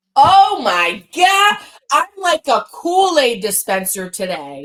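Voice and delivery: exaggerated, cranked-up, loud, high over-the-top proclamation. Retelling how she'd make someone uncomfortable, with an over-the-top line. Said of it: "it was level eleven".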